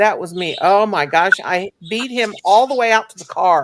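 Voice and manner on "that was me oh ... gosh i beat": ordinary delivery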